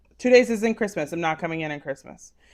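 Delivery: plain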